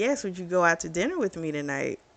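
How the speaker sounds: normal talking voice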